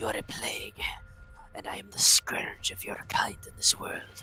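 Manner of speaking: threatening, menacing whisper, up close to ear. Whispering a threat into an enemy's ear before attacking: whispering in character. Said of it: "so I'm gonna whisper into his ear".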